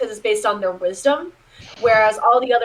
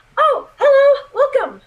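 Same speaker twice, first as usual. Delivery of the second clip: very high, loud little gnome voice; 6 dB louder than usual. Voicing a gnomish man greeting customers entering the general store: gnomish man's voice. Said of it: "a gnomish man kind of look over and go".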